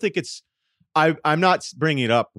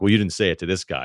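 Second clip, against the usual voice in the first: ordinary talk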